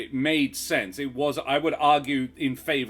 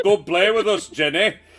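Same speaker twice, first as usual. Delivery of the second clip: fake Liverpool accent, high and raised voice; 7 semitones higher, 8 dB louder than usual. Repeating the movie line to show how it would sound: faux Liverpudlian accent. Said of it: "faux Liverpudlian accent is very upsetting".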